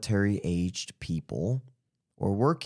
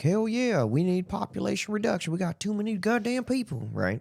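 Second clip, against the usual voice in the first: very high-pitched, clueless, dumb doofus voice; 13 semitones higher than usual. Speaker acting out how uninformed people will react: imitating people who don't know better. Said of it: "I don't know why I did that voice".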